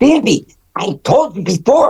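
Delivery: very high cartoon voice.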